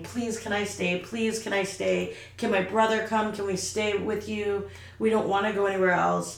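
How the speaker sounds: mock crying, tearful pleading, acted out. Retelling what he said by the weekend's end, imitating him crying and begging. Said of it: "he was, like, crying".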